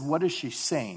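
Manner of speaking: ordinary delivery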